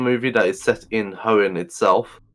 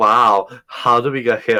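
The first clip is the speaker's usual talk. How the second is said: put-on sarcastic voice; 4 dB louder than usual. Retelling the first lines May says: imitating May's sarcastic voice. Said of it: "sarcastic her voice is".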